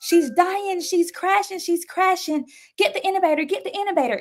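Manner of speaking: acted, shrill, very high, panicked, frantic screaming. Retelling doctors and nurses rushing into the room, imitating frantic screaming. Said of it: "they're screaming to the top of their lungs like".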